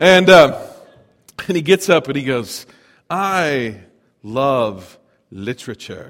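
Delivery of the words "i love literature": low, slow, drawn-out delivery. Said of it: "he said it that way".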